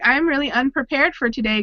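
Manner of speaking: ordinary talk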